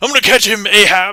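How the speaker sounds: very high, very loud, shrill, booming pirate voice. Voicing a viewer as a vampire hunter: pirate vampire hunter voice. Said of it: "a pirate vampire hunter".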